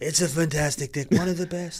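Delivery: put-on loud, high, light New York accent. Trying a Trump impression after being asked for one. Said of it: "Can you do a Trump impression?".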